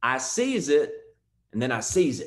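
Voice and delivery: put-on heavy, thick rural country accent. Speaker quoting a man he heard talk about opportunity, thick country accent. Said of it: "So as country as you can imagine".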